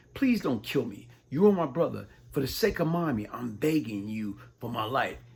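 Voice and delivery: put-on tearful, crying, pleading tone. Recounting holding a gun to his brother's head, the speaker acts out the brother: imitating someone pleading, crying. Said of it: "he's pleading and crying and yelling".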